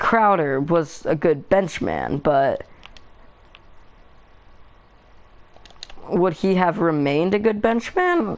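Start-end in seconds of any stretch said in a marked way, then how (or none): 2.2-8.4 squeaky break in the voice, cracking. Discussing a basketball player's role off the bench, voice cracking. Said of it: "I'm so sorry for that voice crack".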